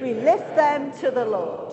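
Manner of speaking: forceful, punchier delivery.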